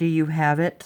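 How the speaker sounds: put-on condescending tone. Imitating a verbally abusive former boyfriend's question: imitating someone condescending. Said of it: "just very condescending".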